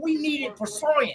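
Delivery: wildlife presenter voice, pitched very high. Retelling a night scene from the show: Steve Irwin impression. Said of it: "He's like".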